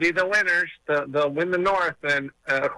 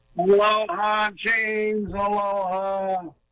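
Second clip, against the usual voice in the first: put-on slurred, sloppy, drunken, drawn-out speech; 4 semitones higher than usual. The caller, just put on, greets the host: sounding drunk. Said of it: "You sound like you had a few too many".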